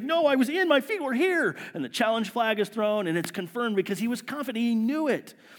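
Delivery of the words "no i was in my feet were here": high, worked-up, protesting shout. Retelling a receiver running to the referee: imitating a player shouting. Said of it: "he starts shouting".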